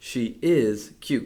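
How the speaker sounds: hard stress on is, rest kept light. Agreeing with a friend that a puppy is cute: stress on is. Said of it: "I placed stress on the verb to show that I agree with my friend".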